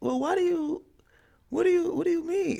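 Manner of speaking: very high, caught-out voice, fighting back laughter. Retelling trying to hold back what they had to say; imitating own pitch going high. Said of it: "my voice pitch get a little high".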